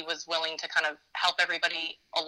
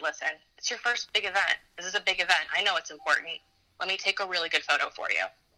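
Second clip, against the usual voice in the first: very quiet, hushed, low, low-key murmur. Retelling someone's offer to take a photo: imitating someone speaking quietly. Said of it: "very quietly, he just said".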